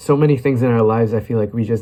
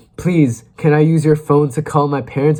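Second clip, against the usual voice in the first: put-on panicked voice, higher; 5 semitones higher, 3 dB louder than usual. Recalling being lost as a kid and asking a stranger for a phone: retelling a panicked plea. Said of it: "So in my panic".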